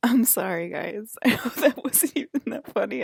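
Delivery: loud, giggling, laughing through the words. Apologizing to viewers for laughing at a joke: laughing while talking. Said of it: "I don't even know why I'm laughing".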